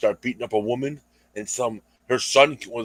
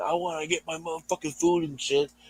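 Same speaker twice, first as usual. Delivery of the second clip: high-pitched mock angry, fed-up, pissed-off griping; 5 semitones higher, 5 dB quieter than usual. Retelling what an attacker said to a woman: imitating a pissed-off man. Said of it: "getting all pissed off and fucking saying".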